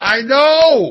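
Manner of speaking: high-pitched, loud yelling.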